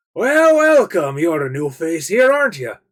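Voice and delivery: put-on loud, high elderly dwarf voice. Narrating to a player, voicing the old dwarf at the bar: old dwarf voice. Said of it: "and the old dwarf looks at you".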